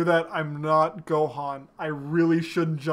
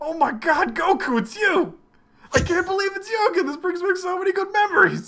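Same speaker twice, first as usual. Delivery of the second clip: very high, overjoyed squeal; 14 semitones higher than usual. Imitating Master Roshi greeting Goku: Master Roshi voice. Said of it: "You do that voice really well".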